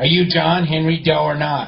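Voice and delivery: ordinary talk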